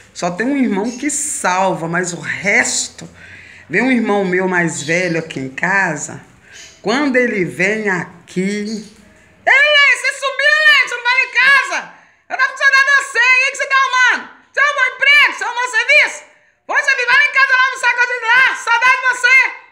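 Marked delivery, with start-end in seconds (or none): 8.4-19.5 high, loud, fast, scandalous chatter. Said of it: "Escandaloso, só fala alto".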